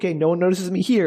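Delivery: plain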